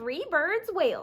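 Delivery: ordinary delivery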